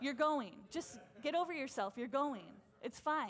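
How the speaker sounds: fed-up, exasperated, angry scolding tone. Preaching on a Bible story, acting out an angry rebuke. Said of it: "And then God gets mad".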